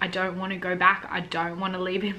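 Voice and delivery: ordinary talk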